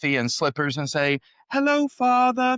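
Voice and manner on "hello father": fake British accent, very high-pitched. Retelling the old joke of imagined children greeting their father, in a pseudo British accent. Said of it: "in some kind of pseudo British accent".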